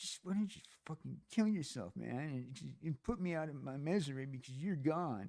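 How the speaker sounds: hushed muttering under the breath, to oneself. Acting out what someone mutters walking away: imitating muttering under one's breath. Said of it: "your breath going".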